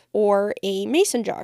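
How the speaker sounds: plain reading voice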